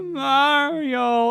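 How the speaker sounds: very high, long, drawn-out, terrified wail. Talking about a game, echoing the tone the character starts with: imitating Luigi's terrified cry. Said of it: "the terror in his voice".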